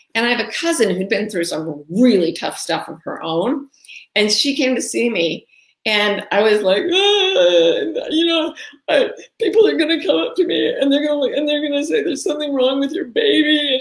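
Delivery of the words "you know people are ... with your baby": put-on wailing, much higher pitch. Retelling what was said to a cousin about the baby, mock wailing.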